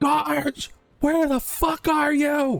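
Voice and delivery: shrill, very high, loud screaming call. A game master voices a character stepping into the hall; screaming. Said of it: "she screams".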